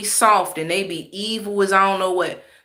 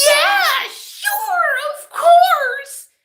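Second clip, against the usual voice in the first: acted, over-the-top animated, very high and slow; 5 dB louder than usual. Mimicking people who talk extremely animated, mock overly animated talk. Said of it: "I really don't like when people talk extremely animated".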